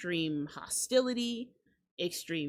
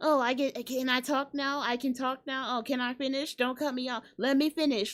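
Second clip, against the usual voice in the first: mock annoying talkative voice, higher; 4 semitones higher than usual. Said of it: "But he was like".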